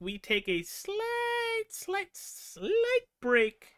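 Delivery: high, very slow, drawn-out delivery.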